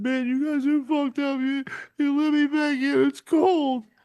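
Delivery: very high-pitched hysterical crying and sobbing. Retelling a kicked-out bar patron pleading in the cold: imitating a man crying hysterically. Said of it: "Hyster-, a grown man".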